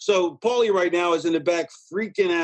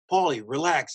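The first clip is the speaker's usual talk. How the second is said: normal talking voice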